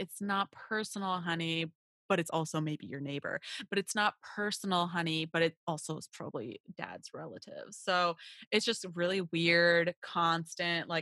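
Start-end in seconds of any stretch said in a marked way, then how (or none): none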